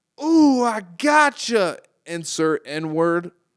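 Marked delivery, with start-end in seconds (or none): 0.2-1.8 put-on very loud, very high yell in a country accent. Retelling what a voice said after a distant gunshot, country voice. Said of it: "this like country ass voice was like".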